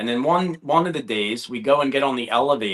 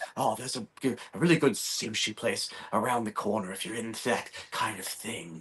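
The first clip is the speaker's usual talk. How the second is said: horror-actor style voice, much quieter; 9 dB quieter than usual. Retelling what a man on the elevator told them, in a Robert Englund-esque voice. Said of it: "he just turns to us like very Robert Englund-esque".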